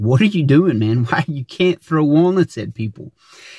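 put-on scolding, telling-off tone. A father recounts disciplining his son in front of his nephew: retelling a scolding. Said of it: "getting onto him".

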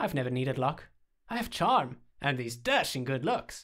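plain reading voice

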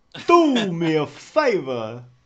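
very loud, very slow mobster voice, each word hammered. Repeating a phrase for the others: Christopher Walken voice. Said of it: "That's Christopher Walken, that is".

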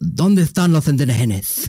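clumsy, badly faked Spanish accent. Retelling Cabeza de Vaca's travels and quoting him: bad Spanish accent as Cabeza de Vaca. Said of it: "I can't do a Spanish accent".

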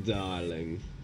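low, soft, put-on smug darling voice. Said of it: "Not sure why I'm talking like this".

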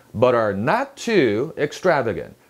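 "not" set apart and stressed hard. English sentence stress lesson, strong stress on not. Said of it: "not는 부정어죠. 힘이 많이 들어갑니다. 띄우고 세게 발음해야 돼요".

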